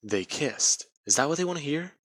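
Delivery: plain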